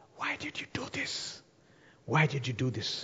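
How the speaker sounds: soft, hushed whisper under the breath. Retelling a story, the younger brother asks a question: imitating a whisper. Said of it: "he asks him in whisper".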